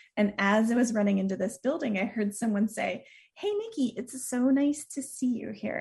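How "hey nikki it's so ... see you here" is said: soothing, easy, slightly high calming tone. Retelling a greeting heard in a dream: soothing Mister Rogers voice. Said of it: "this soothing voice".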